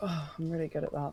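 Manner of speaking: dry, ironic, tongue-in-cheek sarcastic voice. Asked to roll for investigation, a player answers the game master: sarcastic. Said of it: "She says, sarcastically".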